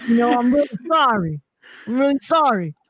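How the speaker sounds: put-on New York accent. Acting out Judas apologizing to Jesus: imitating Judas with New York accent. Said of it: "Judas has a New York accent".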